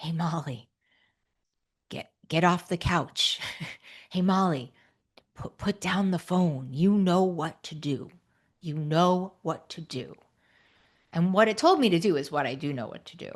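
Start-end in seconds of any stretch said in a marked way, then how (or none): 0.0-10.1 soft, quiet little inner voice. Retelling the inner voice that nudged her off the couch; a quiet little inner voice. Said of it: "I heard that little quiet voice".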